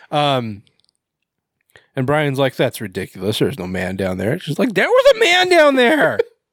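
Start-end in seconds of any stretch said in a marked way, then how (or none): 4.7-6.1 very high, insistent, put-on angry voice. Retelling a woman insisting after Brian doubts her, mock-angry put-on voice. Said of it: "she sounds really angry".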